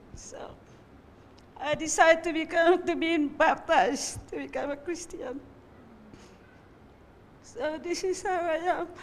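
tearful voice. A speaker shares their story of being baptized, crying. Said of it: "I'm sorry I'm crying because I'm so happy".

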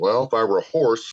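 ordinary talk

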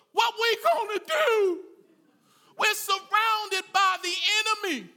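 put-on high, terrified, panicked cry. Acting out someone telling their pastor they're surrounded, acting out terrified panic. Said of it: "You are terrified".

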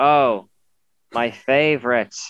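put-on scowling, sulky, sarcastic tone. Retelling a daughter's reply about Mario Kart tracks: imitating a scowling sarcastic reply. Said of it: "With a big scowl on her face".

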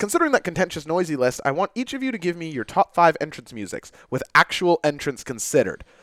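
ordinary talk, nothing marked

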